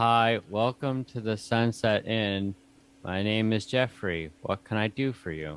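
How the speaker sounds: put-on little kid voice. Voicing a young child at an inn's front desk greeting a guest: voicing a young child. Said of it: "a young child pop their head above the desk and just stare at you and is like".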